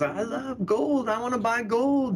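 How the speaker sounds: put-on southern drawl. Retelling how a famous guest spoke on a financial news show, enthusiastic about buying gold; southern accent. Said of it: "He's got this southern accent".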